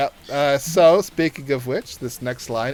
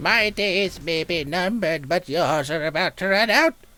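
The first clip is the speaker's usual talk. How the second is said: put-on confused old woman voice, much higher; 6 semitones higher than usual. After a random character roll, the speaker reads the line in a confused old woman voice. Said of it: "confused old woman again".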